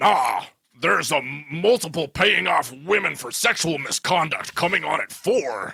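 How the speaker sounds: put-on growly voice. Acting out a scene with a board representative: growly Vince McMahon voice. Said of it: "get into a Vince McMahon".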